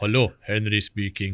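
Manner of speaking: put-on broad Swiss accent. Retelling how the father answered the phone: imitating a broad Swiss accent. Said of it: "he had a broad Swiss accent still".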